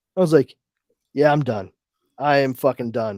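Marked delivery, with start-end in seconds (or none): none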